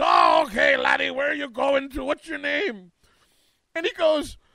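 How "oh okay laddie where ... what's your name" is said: put-on Irish accent, higher and louder. Retelling a comedy skit, voicing a turn-of-the-century Irish immigrant: Irish immigrant voice. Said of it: "with this other Irish immigrant".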